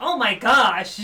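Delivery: loud, big, over-the-top blurted outburst. Not recalling Doggo's exact words, the speaker does Doggo's voice. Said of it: "you'll just hear in Doggo's voice".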